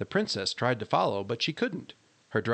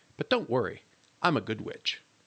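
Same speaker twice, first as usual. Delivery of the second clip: ordinary delivery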